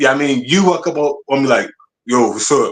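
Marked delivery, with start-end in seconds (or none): 2.0-2.7 imitated deep voice. Retelling a grown former student walking up to greet: imitating a deep voice. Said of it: "you got your deep voice".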